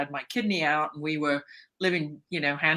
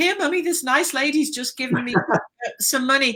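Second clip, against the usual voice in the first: mock child voice, very high and loud, calling out; 9 semitones higher, 5 dB louder than usual. Retelling a childhood call to mummy: imitating own loud child voice. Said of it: "say in a very loud vo-, voice".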